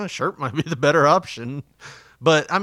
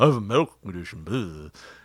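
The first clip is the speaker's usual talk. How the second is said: mocking, rude-sounding put-on voice, pitched lower; 6 semitones lower than usual. Retelling a maskless customer walking past staff, imitating his voice. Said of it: "that's the way he sounded".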